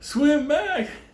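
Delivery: high mock call.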